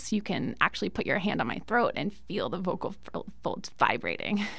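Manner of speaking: low, creaky, fried vocal fry. Explaining slowly vibrating vocal folds, demonstrating creaky voice. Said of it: "So if I start talking like this, ... And that's creaky voice".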